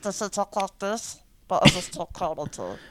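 put-on cartoon alien voice. Showing a friend how a voice actor's character talks, Stitch voice. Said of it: "That's Stitch".

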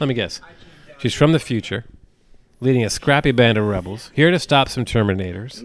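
ordinary delivery

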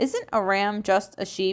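ordinary delivery

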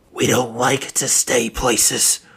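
hoarse rasp on every word. The smoker answers a man who offered his group a deal, in a raspy voice. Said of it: "the smoker said in a raspy voice".

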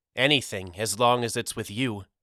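plain

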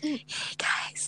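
whispered, very hushed and breathy. Trying out an asmr intro after being told to whisper: whisper. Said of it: "Just whisper".

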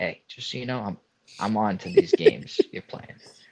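hushed whisper. Acting out a line to lean in and say to a waitress: whispering. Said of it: "you whisper".

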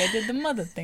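put-on vampire voice. Speaker imitates a woman doing one of her voices, in a Count Chocula voice. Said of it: "she's doing one of her voices".

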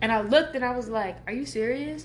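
ordinary talk, nothing marked

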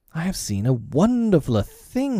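eager, lively, high, swooping cry. He cries out to the others gathering eagerly round him: crying out. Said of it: "he cried as they gathered round him eagerly".

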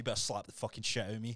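put-on seriousness. Retelling what a lifter told his coach before a lift: imitating a serious demand. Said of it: "no, he's, like, serious".

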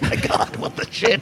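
unvoiced, stunned, disbelieving whisper.

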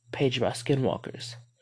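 ordinary delivery

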